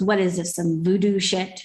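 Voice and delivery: muttered, grumbled half to oneself under the breath. Retelling what a passerby said about the sign: imitating someone muttering under breath. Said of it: "under his breath".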